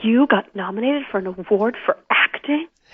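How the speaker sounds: put-on funny voice, half proud, half appalled. Speaker imitates their dad hearing about the acting award nomination, proud yet horrified. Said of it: "in the funniest voice that was like both proud but also kind of like just horrified".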